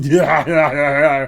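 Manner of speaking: very loud, big laughing delivery. Voicing the room service guy laughing in a game: Arnold voice. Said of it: "Even though Arnold doesn't really laugh like that".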